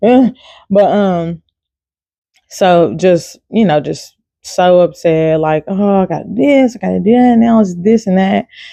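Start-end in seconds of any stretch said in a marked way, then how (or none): 5.7-8.5 whiny fussing, drawn out, pitched higher. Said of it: "my kind of fussing is just really whining".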